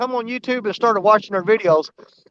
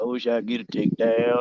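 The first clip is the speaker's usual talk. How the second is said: very low, deep, soft voice; 12 semitones lower, 8 dB quieter than usual. Recounting copying a line someone said during a live stream: imitating Greenwell. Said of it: "I tried to sound just like him".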